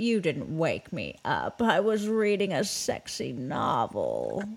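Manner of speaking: put-on low old-Hollywood star voice with swinging pitch. Retelling a woman's hilarious reply to people apologizing for waking her, use a Bette Davis voice. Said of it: "read it as though you are Betty Davis".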